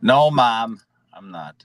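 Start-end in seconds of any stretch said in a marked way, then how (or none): 1.1-1.6 very soft whisper. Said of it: "He's gonna whisper".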